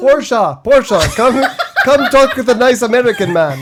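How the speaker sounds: put-on speaking with a Syrian accent. Joking as a refugee parent asking to enter America: put-on Syrian accent. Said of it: "I have no idea what Syrians sound like".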